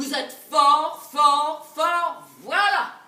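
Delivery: loud, slow admiring tone. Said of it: "Il veut qu'on lui dise".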